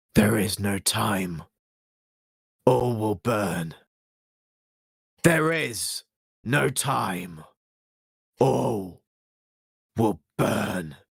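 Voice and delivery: slow, otherworldly, possessed, intoning puppet-like voice. Narrating a scene where a voice speaks through Kyoshi's mouth, deep voice from Kyoshi. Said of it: "A deep voice comes from her mouth".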